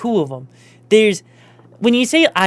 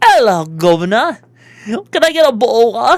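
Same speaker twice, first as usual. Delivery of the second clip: clumsy put-on British accent, raised voice; 5 dB louder than usual. Speaker admits being poor at British accents, then tries one: bad British accent. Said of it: "I have never been one to be good at doing British accents".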